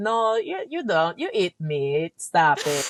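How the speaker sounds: slow, drawn-out, put-on standard American accent. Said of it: "How do you do the accent perfectly?".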